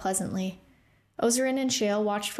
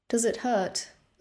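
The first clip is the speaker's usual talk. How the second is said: unsure, tentative, uncertain, hesitant. Ozarin asks the pilgrim a question, asking uncertainly. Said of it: "Ozarin asked uncertainly".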